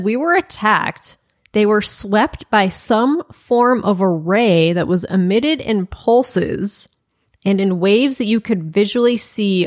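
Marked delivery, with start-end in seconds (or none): none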